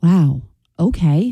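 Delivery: disappointed, let-down tone. Performing the trend's second take of the phrase: disappointed.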